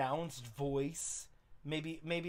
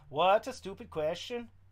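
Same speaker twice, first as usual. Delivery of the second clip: put-on Jamaican-accented delivery; 4 semitones higher, 4 dB louder than usual. Trying out voices for a character, in a jamaican accent.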